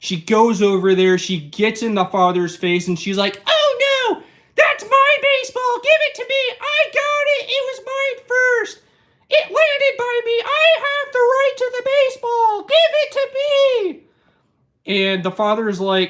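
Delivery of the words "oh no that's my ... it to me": very high, entitled, demanding voice. Retelling a woman demanding a baseball from a father, entitled Karen impression. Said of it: "Sorry for that Karen impersonation".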